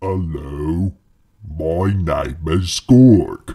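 deep, very low clay-monster voice. Reading a story aloud, the narrator voices the clay monster greeting two travelers: deep, low Gorg voice. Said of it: "said with a deep, low voice".

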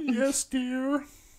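weepy, very high, sobbing tearful voice. Playing a wife in an improv skit, just slapped: acted crying.

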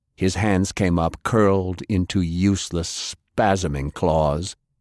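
ordinary delivery

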